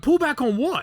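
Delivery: very high, loud yell. Retelling a confused moment in a loud cockpit: retelling own yell. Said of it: "yelling in the, the cockpit".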